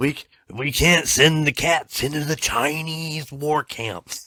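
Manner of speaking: high, very slow, drawn-out wrestling promo drawl. Joking about sending cats into war camps: Macho Man voice. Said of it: "you channeled fucking Macho Man".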